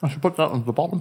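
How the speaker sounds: soft talk through a mouthful of food. Sharing cookies with others, the speaker says something while talking with mouth full. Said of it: "My mouth full of cookie".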